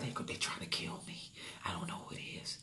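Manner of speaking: very quiet, hushed, barely voiced whisper. Describing a woman on the phone who didn't know who was at the door, whispering. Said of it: "she's on the phone whispering like".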